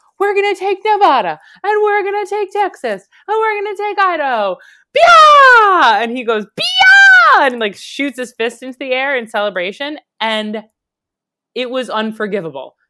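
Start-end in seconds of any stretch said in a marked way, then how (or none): 0.2-6.0 ecstatic, very high, swooping excited yell, stretched vowel. Recounting how a would-be nominee spoke at a rally, imitating an excited rally shout. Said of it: "he got really excited".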